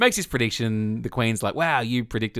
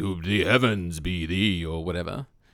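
big, deep, foreboding, portentous voice; 4 semitones lower than usual. Mocking how YouTube videos voice Nostradamus's predictions, in a big foreboding godlike voice. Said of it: "this big, foreboding, godlike voice".

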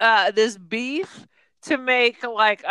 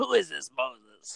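very low, rough, growled gangster voice; 11 semitones lower, 10 dB quieter than usual. Mocking the casting of The Ten Commandments, quoting Moses in Edward G. Robinson noir-gangster voice. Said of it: "he's still talking like he's like the noir gangster".

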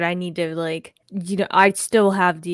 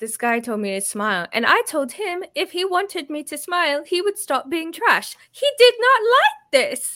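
put-on British accent, very high and swooping; 10 semitones higher than usual. Retelling a video from someone they follow: imitating a weird British accent. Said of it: "she does this weird British accent".

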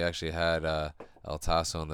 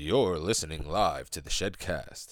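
put-on radio announcer voice. Asked to hit a radio voice, speaker tries a radio announcer voice. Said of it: "If you had to hit a radio voice".

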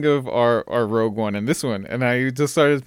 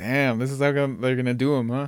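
normal talking voice

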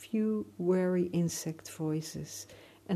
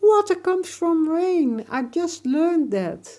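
shrill yell, very loud and very high; 12 semitones higher, 13 dB louder than usual. Narrator reading, Emir calling out to the alligator, shouting. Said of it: "Emir shouted at him".

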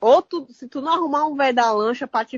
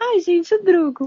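woman's voice, high-pitched, stretched slowly and drawn out; 6 semitones higher than usual. Asked again to say the driver's name in her voice: imitating her voice. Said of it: "Fala aí".

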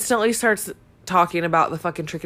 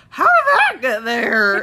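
put-on silly, high, loud drunken voice; 6 semitones higher, 7 dB louder than usual. Retelling a confusing moment, the speaker quotes Mariah's question, imitating Mariah's drunk voice. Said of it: "In her stupid ass drunk voice".

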